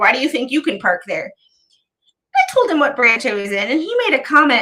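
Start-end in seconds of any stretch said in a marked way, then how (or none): 0.0-1.3 put-on accusatory tone. Retelling how a man questioned the parking spot: imitating an accusatory question.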